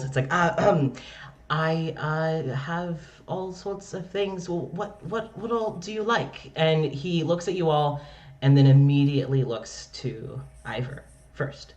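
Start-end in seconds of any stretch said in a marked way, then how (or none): 0.3-6.5 embarrassed, flustered, nervous stumbling ramble full of ums. Voicing a town baker-cleric greeting the party: flustered rambling cleric. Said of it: "His face goes a little red".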